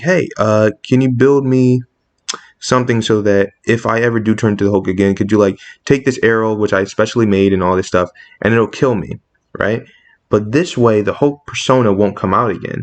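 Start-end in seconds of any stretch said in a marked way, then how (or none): none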